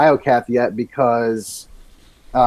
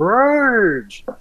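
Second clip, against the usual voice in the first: high, dorky yell. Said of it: "he sounds like the Master Blaster boss".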